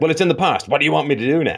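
harsh, dismissive, high-pitched tone. Telling a story about her, quote what she said, retelling her words harshly. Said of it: "I'm probably characterizing the way she said it a bit harshly".

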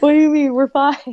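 loud, doofy dad voice. Imitating dad brushing off a worry: imitating dad's voice. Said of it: "that's what he sounds like".

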